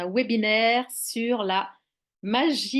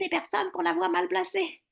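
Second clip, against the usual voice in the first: exaggerated put-on witch voice, much higher; 9 semitones higher than usual. Talking about people with badly placed voices, the speaker demonstrates in exaggerated witch voice. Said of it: "je fais un peu la voix de sorcière".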